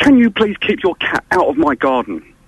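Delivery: stern, bossy put-on voice of authority. Retelling a neighbour's request about the cat: imitating an authoritarian voice. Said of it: "very authoritarian sort of, um, you know, voice that she put on".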